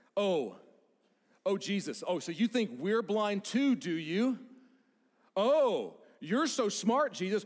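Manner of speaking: mock, heavy, taunting sarcasm, loud and high. Retelling what the Pharisees say to Jesus, mock-sarcastic. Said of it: "It's sarcastically".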